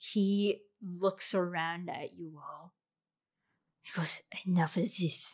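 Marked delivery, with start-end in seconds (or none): 4.5-5.3 angry, fed-up, anger breaking through. Voicing a character as anger floods his eyes: angry. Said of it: "anger now floods his eyes".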